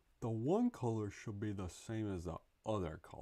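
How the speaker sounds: old-school dumb cartoon guy voice. Playing a dumb guy figuring out art live, using a Looney Tunes cartoon voice. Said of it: "like a Looney Tunes guy?".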